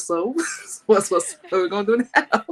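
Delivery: snarky, heavily sarcastic tone. Retelling a joking response to people's remarks, imitating own sarcastic comment. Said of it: "Or the sarcastic comment".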